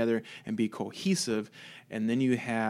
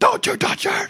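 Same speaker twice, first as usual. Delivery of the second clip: mock scream, much higher and louder; 9 dB louder than usual. Speaker retells a character's reaction when they kill her, retelling a scream. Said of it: "he starts screaming".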